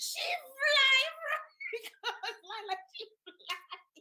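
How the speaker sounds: high, whispered, laughing, giggling delivery.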